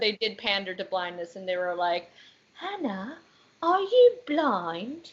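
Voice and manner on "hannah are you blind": slow, high, swooping put-on British accent. Speaker quoting what the show said to a character, in a British accent. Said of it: "(In British accent)".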